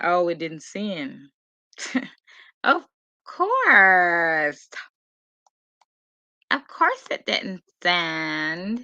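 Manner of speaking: put-on valley girl accent. Host searching for a missing co-host, speaking in Valley Girl voice. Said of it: "Using my Valley Girl voice".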